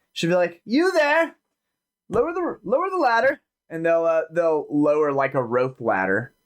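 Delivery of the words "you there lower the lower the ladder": very high, loud call projected upward. Voicing a character on the dock who is calling up to a sailor aboard a ship. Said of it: "she will call up at, uh, a sailor".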